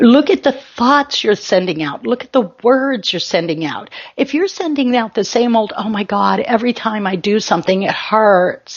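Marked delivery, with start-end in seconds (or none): 5.8-8.8 sarcastic, mocking put-on complaining tone. Imitating the words people send out: sarcastic imitation of a complaint. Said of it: "I'm being a little sarcastic".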